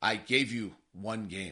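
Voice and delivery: very low, quietly spoken voice. Retelling a player's reply when the trainers come up to him, retelling a quiet remark. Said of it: "says quietly".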